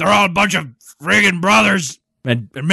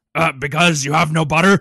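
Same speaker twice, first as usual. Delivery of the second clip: usual speaking voice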